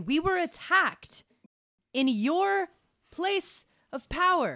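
very high, very slow, drawn-out shout. Character shouts down the hallway about an attack: shouting down the hallway. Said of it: "I will just shout down the hallway".

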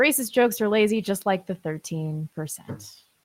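plain

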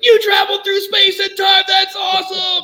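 very high, slow, shouted total freak-out. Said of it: "total freak out mode".

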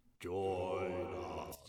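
eerie, creepy, drawn-out haunted-house voice. A voice in a weird house calls out to two people: creepy voice. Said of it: "The creepy voice saying".

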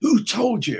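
urgent hissing, very high-pitched. Retelling how a man pulled him aside and asked: imitating someone hissing. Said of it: "said in a kind of hiss at me".

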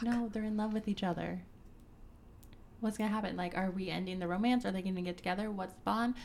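normal talking voice

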